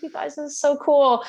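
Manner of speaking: very high-pitched, thrilled, excited gushing. Retelling what they told their ants in a new terrarium: imitating own past excitement. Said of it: "I was so excited".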